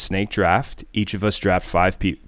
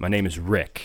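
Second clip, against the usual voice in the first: put-on stern voice, quieter; 4 dB quieter than usual. Retelling how Mike answered a girl asking his name, imitating Mike's stern voice. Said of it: "Mike with this just stern voice he goes".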